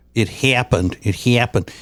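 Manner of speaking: flat Chicago Midwest short a in "happened". Discussing regional accents with a co-host, demonstrating a Chicago short A accent. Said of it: "like with people from Chicago".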